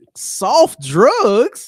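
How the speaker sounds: very high, swooping sing-song put-on voice, "drugs" stretched. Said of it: "in my Soldier Boy voice".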